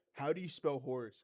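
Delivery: totally earnest, deadpan, dropped low. Retelling how someone asked a question: imitating someone dead serious. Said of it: "'cause he's dead serious".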